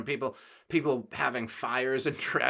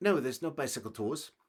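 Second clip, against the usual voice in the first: put-on speaking with Danish accent. Retelling what the hotel front desk woman in Copenhagen answered, in a Danish accent. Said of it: "that's because that's a Den- Danish accent".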